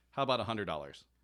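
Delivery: normal talking voice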